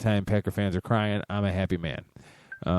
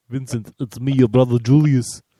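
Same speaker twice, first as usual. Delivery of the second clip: nasal put-on voice, high and loud; 5 semitones higher, 9 dB louder than usual. Joking that people expect them to be the actors, Arnold Schwarzenegger impression. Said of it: "I got a little nasal on that. I'm usually better with my Arnold".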